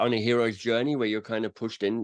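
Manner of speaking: plain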